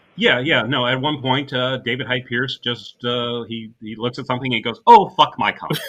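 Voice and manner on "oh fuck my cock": mock-offhanded delivery, higher and louder. Describing a movie scene, the speaker imitates David Hyde Pierce's offhanded tone. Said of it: "in that offhanded sort of tone of voice".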